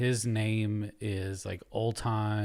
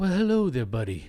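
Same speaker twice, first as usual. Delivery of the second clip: put-on whispery voice, higher; 7 semitones higher than usual. Imitating a social media creator's video greeting: whispery Old Time Hockney impression. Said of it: "He's, like, whispery".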